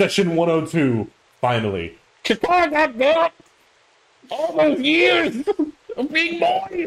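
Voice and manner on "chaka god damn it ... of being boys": put-on voice going way up with hillbilly accent. Opening the session with a jokey line: Mister Meeseeks voice with hillbilly accent. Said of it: "a bit of a Hickabilly accent in there".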